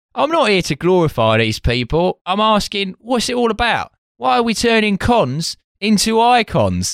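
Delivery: put-on East London accent. Retelling what a sculptor said, in an East London accent. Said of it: "doing him like an East London voice".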